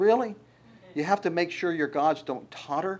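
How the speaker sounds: sarcastic, unimpressed, dismissive tone. Explaining a Bible verse, voicing God sarcastically. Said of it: "That's God being sarcastic".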